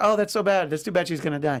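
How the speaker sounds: ordinary delivery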